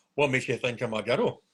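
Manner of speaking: really manly voice, low, soft and mock. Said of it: "you should have gone a really manly voice".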